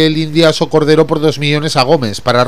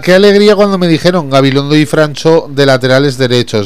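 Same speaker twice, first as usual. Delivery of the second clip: ordinary delivery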